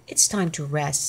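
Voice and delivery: plain reading voice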